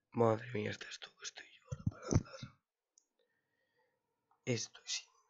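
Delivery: overexcited, barely able to talk. A streamer talking to viewers, euphoric, barely able to talk. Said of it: "estoy muy eufórico".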